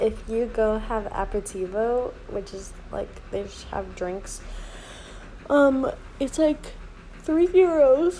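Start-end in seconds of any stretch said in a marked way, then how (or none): 5.5-8.2 yawning, higher, louder, much slower. Speaker apologizes mid-sentence while talking, yawning. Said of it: "Sorry, I'm yawning".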